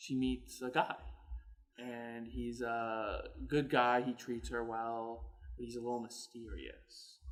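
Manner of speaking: low, soft, slow, ominous narrator voice.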